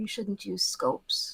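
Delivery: hushed, soft whisper, very close. A player's character creeps behind a rooftop sniper and speaks into his ear, whispering. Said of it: "she whispers in his ears".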